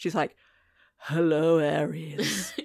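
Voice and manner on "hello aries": very husky put-on voice, lower. Retelling how she greets aries, very husky voice. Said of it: "she goes very husky".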